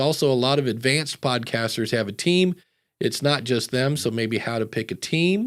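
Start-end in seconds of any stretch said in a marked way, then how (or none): none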